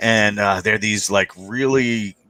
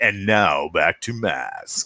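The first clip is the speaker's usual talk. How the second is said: slow, eerie, creepy TV announcer voice; 4 semitones lower than usual. Retelling how a remembered announcer introduced the show: imitating a creepy announcer voice. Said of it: "that creepy voice guy".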